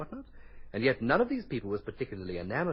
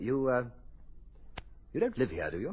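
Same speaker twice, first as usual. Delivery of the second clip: taken aback, surprised, hesitating mid-sentence; 3 semitones higher than usual. An inspector, just introduced to a woman's brother, questions him, surprised. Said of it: "You sound surprised".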